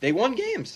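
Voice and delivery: voice breaking, cracking very high. Making a point, the speaker's voice cracks. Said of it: "That was a voice crack".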